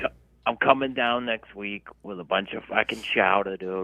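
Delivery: put-on Boston accent all the way through. Showing the others on the call a Boston accent, Boston accent. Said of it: "do you guys want to hear a Boston accent?".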